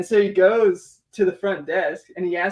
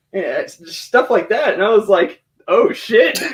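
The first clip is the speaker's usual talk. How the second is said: normal talking voice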